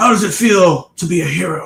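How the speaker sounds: slow, dying voice, like a final breath. Retelling a dying villain's last words: Ray Walston dying voice. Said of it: "in his best Ray Walston, dying voice".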